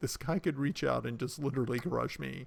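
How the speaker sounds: normal talking voice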